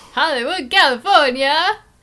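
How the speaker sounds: very loud, high game show host voice. Introducing themselves and a fellow film editor, the speaker does a game show host voice. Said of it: "That was my best game show host impression ever".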